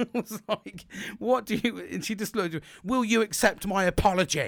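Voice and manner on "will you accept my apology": really loud, booming voice. Retelling what a woman asked them, imitating someone talking really loud. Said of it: "Really loud".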